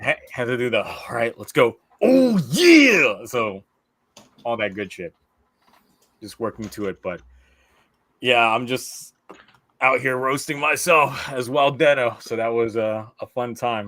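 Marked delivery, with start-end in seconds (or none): 2.0-3.2 drawn-out, pumped, slow, swooping hype-up delivery. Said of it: "I gotta throw out a couple".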